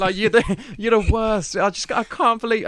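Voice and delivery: put-on weepy, heartbroken, high, tearful distraught outburst. Retelling waking up to a partner's accusation, imitating someone crying in distress. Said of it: "and she's in tears".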